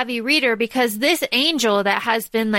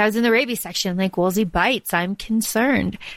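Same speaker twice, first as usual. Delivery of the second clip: fake deadpan delivery; 2 semitones lower than usual. Talking about a book, quoting a favourite character: deadpan Magnus impression. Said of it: "he says it really deadpan".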